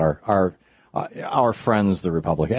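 usual speaking voice

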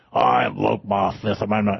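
clumsy, creaky, rough put-on mobster voice. Quoting the old mafia bosses who invoked the Fifth, in a bad mafia voice. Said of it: "I can't even do a good mafia voice".

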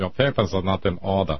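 stock bad-guy villain German accent. Demonstrating his go-to villain voice: stock bad-guy German accent. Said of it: "that's my stock bad guy German accent".

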